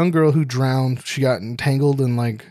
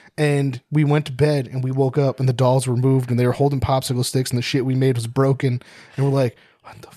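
usual speaking voice

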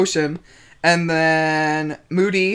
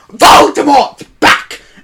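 very high-pitched, very loud, blurted cry; 9 semitones higher, 9 dB louder than usual. Retelling the chapter, imitating Harry Potter announcing the news: Harry Potter impression. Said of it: "that sounded like how he said it".

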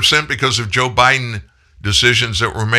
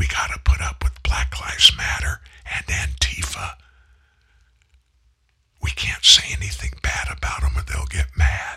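hushed, breathy stage whisper; 5 semitones lower, 7 dB quieter than usual. A host says he won't say this out loud, so he whispers it. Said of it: "I'm going to whisper".

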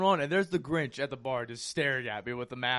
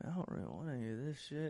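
put-on muttering voice, quieter; 12 dB quieter than usual. Retelling what someone said when he sat down: imitating Cody Ray muttering under his breath. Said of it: "underneath of his breath".

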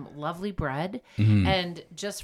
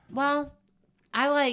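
pitched-up speech with mouth full, mid-bite; 8 semitones higher than usual. Podcast host answers the other host's question while snacking, talking with mouth full. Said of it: "Sorry, I took a bite".

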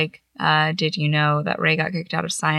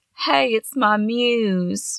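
very slow, drawn-out southern drawl, words stretched; 4 semitones higher than usual. Retelling a man's greeting to her, in a southern-sounding accent. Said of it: "That sounded like a southern accent".

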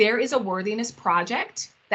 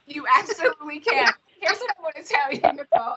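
high-pitched, cracking up laughing mid-sentence; 6 semitones higher than usual. Speaking to Nicole, Sarah and everybody, cracking up. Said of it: "I'm cracking up about that".

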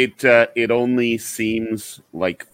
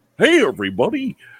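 high, pitched-up cartoon dog voice; 8 semitones higher than usual. Asked who did Goofy's voice, the speaker demonstrates his own Goofy voice. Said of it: "I think I do an okay Goofy".

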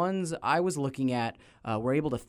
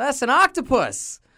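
put-on Southern accent in a very high voice; 12 semitones higher, 8 dB louder than usual. Quoting a cartoon character who points out an octopus: put-on southern accent. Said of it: "he's got the southern accent, and he goes".

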